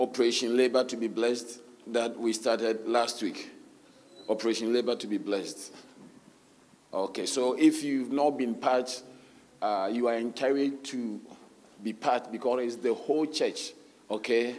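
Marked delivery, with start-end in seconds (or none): 4.3-5.7 quick, rattled-off fast delivery. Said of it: "How many have been part of the".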